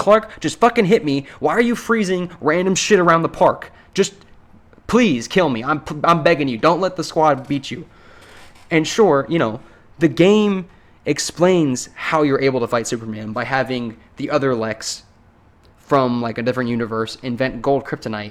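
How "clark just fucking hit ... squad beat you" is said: put-on exasperated, frustrated, begging yelling. Retelling yelling at the TV during a game fight: retelling yelling at the TV. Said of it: "I was just yelling at my T V like".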